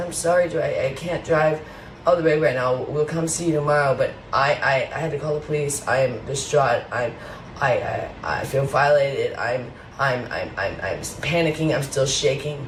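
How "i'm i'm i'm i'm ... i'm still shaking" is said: ordinary talk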